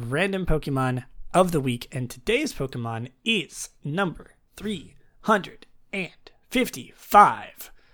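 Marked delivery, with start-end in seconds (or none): 1.9-7.7 robotic, automated machine announcement voice. A podcast host announces the random Pokemon of the week, like a voice machine. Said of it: "I sounded like a voice machine".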